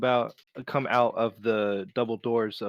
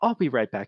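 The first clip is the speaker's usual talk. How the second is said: calm, composed, smiling tone. Voicing an innkeeper turning to a customer: calm, smiley voice. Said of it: "in a calm, s-, smiley voice".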